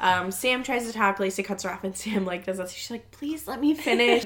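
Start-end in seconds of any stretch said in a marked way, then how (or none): 3.1-4.3 mild-mannered, gentle, yet insistent and forceful tone. Retelling how Sam asked not to be cut off: imitating Sam, soft-spoken. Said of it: "And that's soft-spoken".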